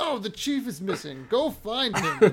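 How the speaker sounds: put-on loud, high, elderly old-man voice. Describing a video game's quest dialogue, imitating an old man game character. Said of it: "an old man".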